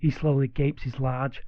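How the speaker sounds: usual speaking voice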